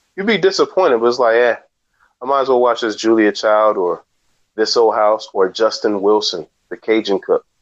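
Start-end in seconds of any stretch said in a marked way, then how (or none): none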